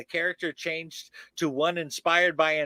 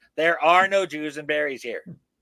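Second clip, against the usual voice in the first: ordinary talk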